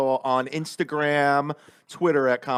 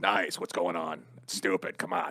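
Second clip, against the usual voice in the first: very slow, stretched funny voice; 9 semitones lower, 8 dB quieter than usual. Showing the impression once done on morning radio: Jim Florentine impression. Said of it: "do Jim Florentine when we did morning radio".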